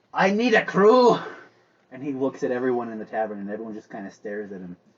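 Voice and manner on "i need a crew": booming, loud, very slow, drawn-out announcer-style call. Storyteller voices a captain walking into the tavern calling for a crew, in a loud voice. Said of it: "in a loud voice he says".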